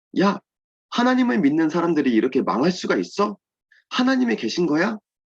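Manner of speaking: high-pitched, mocking, taunting jeer. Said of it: "막 이렇게 우리를 조롱하고 놀리고".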